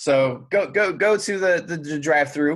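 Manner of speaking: slow stutter, tripping over words, repeating them. Telling a story about going to a drive-thru, stuttering. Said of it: "there I go stuttering again".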